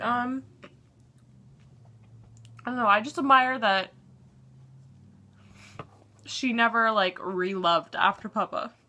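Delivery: tearful, crying while talking. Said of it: "I think this is why I'm crying".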